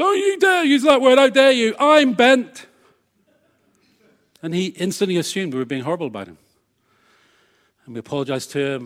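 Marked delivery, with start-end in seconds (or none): 0.0-2.7 very high, shrill, drawn-out, outraged, indignant objecting voice. Retelling a diner's objection in a curry house: imitating an offended man. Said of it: "took great exception".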